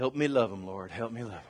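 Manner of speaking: imitated mutter under breath. Retelling what she said after a deep breath: imitating muttering under breath. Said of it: "And under her breath".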